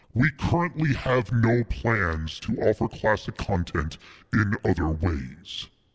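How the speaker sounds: sinister, evil put-on villain voice. Reading a line from Nintendo's website FAQ aloud, in an evil voice. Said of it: "we're going to use the evil voice for this".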